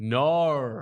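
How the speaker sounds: Australian accent, no said as drawn-out nar. Showing how to say no in an Australian accent: Australian accent. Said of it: "it's gonna be an R".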